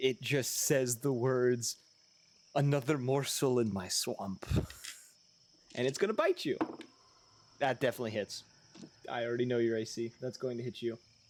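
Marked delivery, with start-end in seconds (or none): 2.5-4.4 female monster voice, swamp creature style. A game master voices a monster closing in on a player character, in a deep female voice. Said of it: "in a deep female voice".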